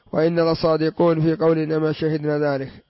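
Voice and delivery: ordinary talk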